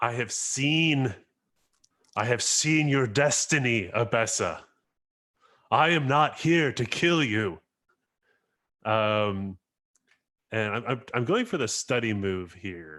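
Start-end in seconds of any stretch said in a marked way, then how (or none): 0.0-7.6 character yell with the word "seen" drawn out. Playing a character who chases another down a collapsing hallway: character shouting. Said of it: "shouting at her, like".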